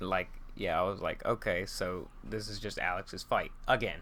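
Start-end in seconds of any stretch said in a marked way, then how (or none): none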